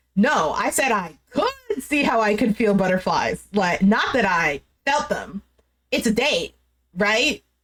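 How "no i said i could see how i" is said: usual speaking voice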